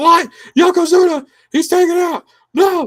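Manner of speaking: shrill, very high, very loud, stretched-out scream. Retelling a wrestling manager's reaction to news: imitating Jim Cornette screaming. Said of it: "He's, like, screaming".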